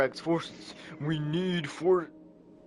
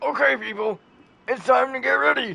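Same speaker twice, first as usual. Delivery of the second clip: very high, rough put-on voice; 9 semitones higher, 7 dB louder than usual. Trying the Seth Rogen impression again and asking if it worked. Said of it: "Could you hear it?".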